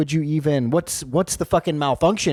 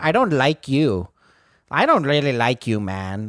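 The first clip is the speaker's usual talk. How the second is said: slow, deliberate, drawn-out put-on Indian accent; 2 semitones lower than usual. Retelling what a comic said on stage about him, in a put-on Indian accent. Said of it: "stop impersonating me in an Indian accent".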